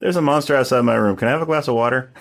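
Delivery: run-together lines, no pause. Delivering a creepy line, both sentences with no pause between sentences. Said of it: "no no pause between the two".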